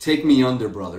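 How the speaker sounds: whispered voice like a wrestler. Recounting a wrestling match as Hogan whispers to the Giant, whispering as Hulk Hogan. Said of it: "whispers to the Giant".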